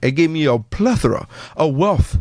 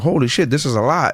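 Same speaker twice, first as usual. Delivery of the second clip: ordinary talk, nothing marked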